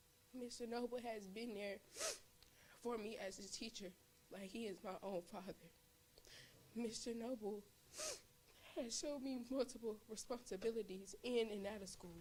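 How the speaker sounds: fighting off tears while speaking. A student thanking their teacher, holding back tears. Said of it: "I'm trying not to cry".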